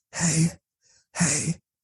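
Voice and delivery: soft whisper right in the ear. Retelling how he whispered in the speaker's ear, imitating a whisper. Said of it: "he whispers in my ear like".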